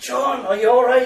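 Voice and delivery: very loud, very high-pitched calling shout. Retelling a greeting outside a cathedral: imitating someone shouting. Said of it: "he's shouting".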